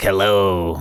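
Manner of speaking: scary horror-movie villain monster voice. Retelling how Dad used to scare the speaker: Freddy Krueger voice. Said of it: "do Freddy's voice".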